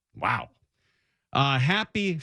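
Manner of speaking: ordinary delivery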